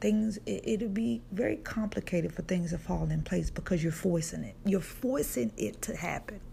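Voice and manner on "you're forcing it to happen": strong, laid-on New York accent. Giving advice to listeners, sounding like a true New Yorker. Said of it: "Now I sound like a true New Yorker".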